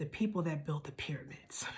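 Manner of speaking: soft, tearful, choked-up whisper.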